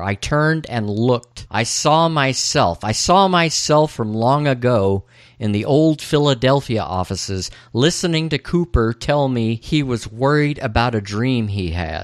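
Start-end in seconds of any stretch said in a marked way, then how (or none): none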